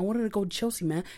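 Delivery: put-on American way of talking. Imitating how a man talks when he puts on an American way of speaking: fake American accent. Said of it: "he's speaking like this".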